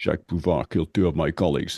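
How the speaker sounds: put-on Scottish accent impression. Describing Bond's angered delivery, the speaker quotes his one line; Connery impression. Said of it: "his Connery is unbelievable".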